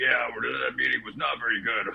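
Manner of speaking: rough, gruff, creaky mob-boss grumble. Mocking a cigar-smoking coworker from sales meetings: imitating a gruff voice. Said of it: "he just had a very gruff voice".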